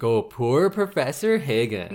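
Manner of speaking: normal talking voice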